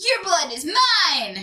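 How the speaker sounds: high, swooping tune with "mine" drawn out. Doing an impression of a character when asked: Marceline voice. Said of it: "which is from Marceline".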